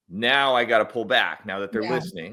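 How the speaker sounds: normal talking voice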